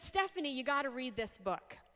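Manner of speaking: ordinary talk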